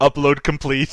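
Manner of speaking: ordinary talk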